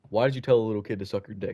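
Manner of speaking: ordinary talk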